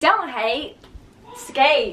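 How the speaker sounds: put-on country accent, slipped into. Repeating a skating slogan while turning into a skater girl, in a country accent. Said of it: "Why am I talking in a country accent?".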